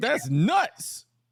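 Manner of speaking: high, loud mocking reaction.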